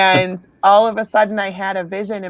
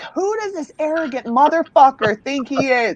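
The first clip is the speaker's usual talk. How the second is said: mock enraged, furious high-pitched yelling outburst; 6 semitones higher than usual. Speaker retells losing it at a man, retelling her furious screaming. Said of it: "And I'm screaming".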